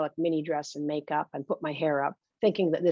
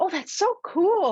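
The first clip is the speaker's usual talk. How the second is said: mock very high, forced bright, drawn-out squeal; 4 dB louder than usual. The narrator, a coat check girl, reacts to a would-be wrestler's ring name: squealing. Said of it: "I squeal".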